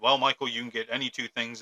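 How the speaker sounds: stern, really angry grandfather voice, acted out. Retelling grandfather's words at a pawn shop, imitating his angry voice. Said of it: "in his really angry voice".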